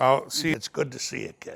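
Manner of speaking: hushed, soft, breathy showman voice, murmured. Asked for an impression of George Burns, greeting the host: George Burns voice. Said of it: "Let's do a little George Burns".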